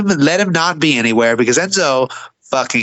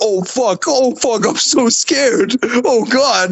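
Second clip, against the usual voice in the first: very slow, drawn-out, sarcastic fake terror; 8 semitones higher than usual. Retelling own reaction to a wrestler's callout: sarcastic mock fear. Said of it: "I'm so fucking scared of the man who can't".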